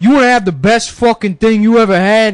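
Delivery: put-on New Jersey accent. Retelling what a stranger on the corner said: imitating a New Jersey Italian stereotype. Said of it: "he's like".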